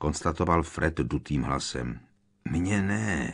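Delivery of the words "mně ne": speaking through gritted, clenched teeth. A narrator reads a character's reply to another's complaint, through gritted teeth. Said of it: "procedil George zaťatými zuby".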